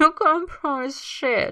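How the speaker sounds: speaking through a laugh. Narrator reads Matthew's reply as Tyler comforts him, laughing while speaking. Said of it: "but he laughs as he says it".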